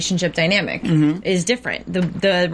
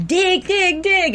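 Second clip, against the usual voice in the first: put-on very high, shrill, repeated shouting; 12 semitones higher than usual. Retelling a man yelling to his paddling partner in the water, retelling a yell. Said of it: "Jeff was yelling".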